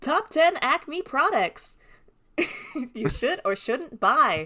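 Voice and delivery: high computer text-to-speech narration voice. Picturing a cartoon coyote as an influencer, speaker does the TikTok text-to-speech voice. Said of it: "all done in the TikTok voice".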